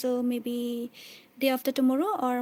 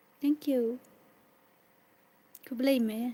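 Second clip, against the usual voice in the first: quieter crying, voice breaking with tears; 4 dB quieter than usual. Speaker thanks the audience on stream, crying. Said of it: "I'm crying right now".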